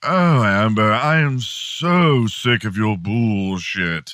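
slow, drawn-out, drawling movie-star voice. Acting out an imagined fight between two celebrities: Johnny Depp impression. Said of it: "here's how I think it went".

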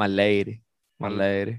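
Southern American accent. Trying out a phrase the way they want to say it, in a southern accent. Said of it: "I want to say with a southern accent".

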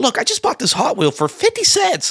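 squeaky, very high voice. Telling another speaker about a garage-sale hustle, squeaky Gary Vee impression. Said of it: "He has a squeaky voice".

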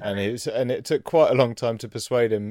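ordinary delivery

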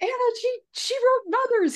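reenacted excited outburst. Recalling waking her husband, the speaker retells an excited outburst. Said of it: "I was so excited".

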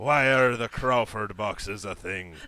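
very loud, booming put-on pirate voice. Trying out accents and mixing them up, asking a question in a pirate accent. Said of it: "That's definitely pirate".

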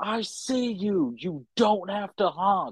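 furious, drawn-out angry screaming. Recounting a man in a parking garage at night, the speaker retells his screaming. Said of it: "starts screaming at me".

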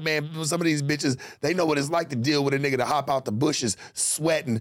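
usual speaking voice

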